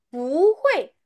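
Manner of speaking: 不 of 不会 climbs with a second-tone rise. Mandarin lesson contrasting the tones of 不: rising tone on 不. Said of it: "dia naik".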